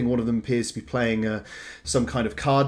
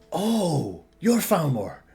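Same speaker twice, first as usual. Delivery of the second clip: swooping put-on West Country accent, starting Northern Irish; 5 semitones higher than usual. Playing a character meeting Falmore, meant to be Northern Irish, put-on accent slipping into West Country. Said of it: "Stop going to West".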